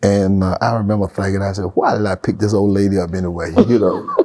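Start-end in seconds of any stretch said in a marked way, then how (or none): none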